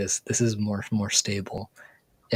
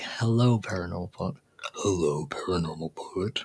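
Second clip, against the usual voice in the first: sexy, alluring voice. Demonstrating how their own voice sounds when sick, sounding sexy. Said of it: "I still sound sexy somehow".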